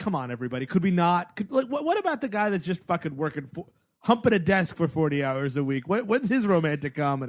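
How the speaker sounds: ordinary talk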